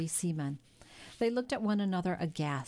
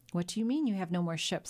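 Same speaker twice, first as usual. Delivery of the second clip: usual speaking voice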